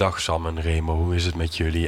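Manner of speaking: very low, calm, laid-back, chill voice. Retelling how the wedding officiant phoned the hosts, imitating a calm, chill man. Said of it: "Die praatte echt zo".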